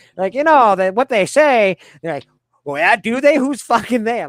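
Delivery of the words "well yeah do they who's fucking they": indignant, fuming, high, furious tone. Retelling how women react to the tooth-pain comparison: imitating a furious woman. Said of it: "They get fucking mad as fuck".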